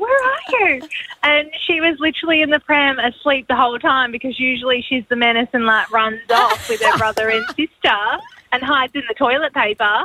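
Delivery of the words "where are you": very high, panicked, frantic scream, calling out. Recalling searching for her sleeping daughter in Aldi: retelling a scream. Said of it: "I'm like screaming in Aldi".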